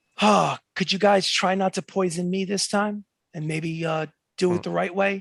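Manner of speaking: conspiratorial, confiding, leaned-in private tone. Voicing a noble who leans in toward the players: speaking very quietly. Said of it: "she says very quietly".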